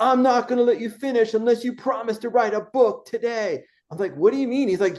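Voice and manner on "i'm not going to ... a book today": mock screaming in a much higher-pitched voice. Recalling a man in the audience screaming at them during a talk, imitating a screaming man. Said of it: "just started screaming at me".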